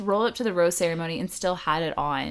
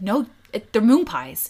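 mock defensive tone, louder; 4 dB louder than usual. Retelling how a man answered other guys' remark: mock-defensive. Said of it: "He was very defensive".

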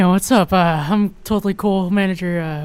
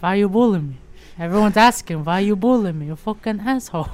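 mix of Boston and Italian accent. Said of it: "in between like a Boston and an Italian accent".

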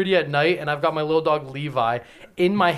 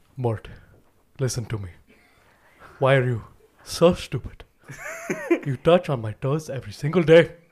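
pitch swinging widely up and down; 2 semitones lower than usual. Recalling class, the speaker redoes the bit once done there; King Julien voice. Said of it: "I used to do King Julian up in here".

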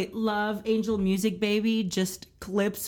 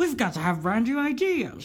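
put-on heightened 1960s musical-film style speech. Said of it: "they kind of talk like this".

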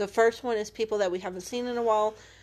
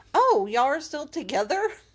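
loud, high, mock incredulous surprise; 6 semitones higher, 6 dB louder than usual. Quoting people asking if they're still with Will: mock-disbelieving tone. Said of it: "they say it like so disbelievingly".

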